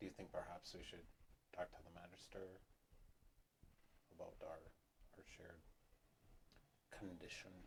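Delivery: very quiet, hushed voice. Speaking in character to a companion while walking: lowered voice. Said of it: "I lower my voice and talk to Tizzle".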